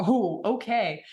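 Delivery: slow, drawn-out "okay" with dawning surprise.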